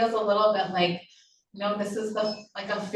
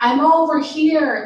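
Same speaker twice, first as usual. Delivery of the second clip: very loud, high, booming voice; 7 semitones higher, 12 dB louder than usual. Telling a story about a man speaking to her, retelling a booming voice. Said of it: "he said in this really booming voice".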